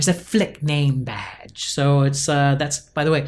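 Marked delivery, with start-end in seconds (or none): 0.0-1.7 weak, bad put-on English accent. Recalling a voice stuck in their head at the board, in Karen's English accent. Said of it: "that's as good of an English accent as you'll ever get from me".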